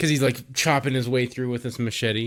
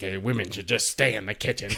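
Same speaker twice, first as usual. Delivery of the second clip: sore, resentful, pissed-off grumbling; 4 semitones lower, 5 dB quieter than usual. Retelling a film scene about a man angry at a woman: imitating a pissed-off man. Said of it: "he's all pissed off".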